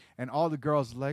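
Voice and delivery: ordinary talk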